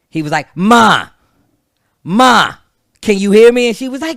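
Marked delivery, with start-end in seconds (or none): 0.6-3.7 put-on loud, drawn-out Boston accent. Retelling an overheard phone call, imitating Ralph's Boston accent. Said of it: "he's got like a fucking Boston accent".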